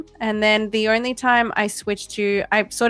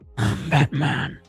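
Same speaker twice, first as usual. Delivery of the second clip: very low, deepest possible superhero voice; 7 semitones lower than usual. On stream, while talking about someone's real voice: Batman impression. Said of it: "Pretty good impression".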